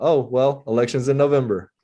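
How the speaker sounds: put-on smug voice. Retelling the mayor's reply to a vow to vote him out: imitating a smug reply. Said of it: "he very smugly said".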